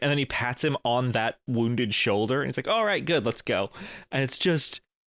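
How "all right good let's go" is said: mock casual, offhand, couldn't-care-less tone. Retelling a movie scene where a character pats a wounded shoulder: imitating an uncaring character. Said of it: "the level of fucks he does not give".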